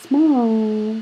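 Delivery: ordinary delivery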